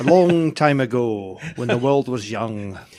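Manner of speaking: put-on lilting Scottish-style accent, wizard voice.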